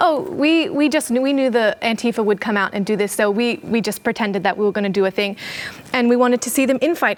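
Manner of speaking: plain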